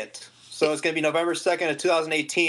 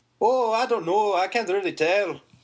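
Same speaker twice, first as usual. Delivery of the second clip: poor, fumbling attempt at a Scottish accent; 3 semitones higher than usual. Asked whether they do any accents, answering in a bad Scottish accent. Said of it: "I think I'm trying to do Scottish, but it's really bad".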